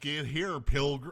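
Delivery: put-on Texas hillbilly drawl. Arguing with the other speaker over whether Texans drawl, in a Texas hillbilly drawl. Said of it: "it totally is".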